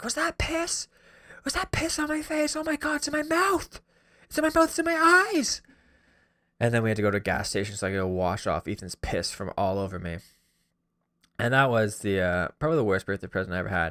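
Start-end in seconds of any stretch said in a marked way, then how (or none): 0.0-5.6 frantic, panicked, very high shrieking. Retelling being hit in the face with piss in a car: imitating own past screaming.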